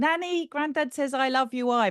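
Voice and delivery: acted-out shout. Recalling standing up and calling to her nan at the gate: retelling a shout. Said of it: "And I'm shouting".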